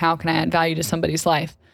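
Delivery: ordinary delivery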